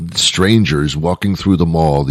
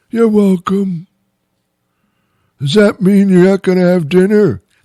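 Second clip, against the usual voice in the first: put-on very high-pitched old man voice; 3 dB louder than usual. Acting out an old man replying to thanks in the mall, in an elderly man voice. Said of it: "this is my elderly man voice".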